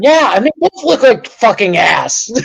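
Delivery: worked-up, irritated, heated griping. Talking sports with another speaker, getting pissed off. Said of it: "I don't know why I'm getting pissed off".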